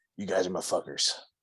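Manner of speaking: low, growling stage whisper. Recalling what the listener half-whispered to them at an awards event, imitating a low growly half-whisper. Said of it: "whispered in a low, growly voice".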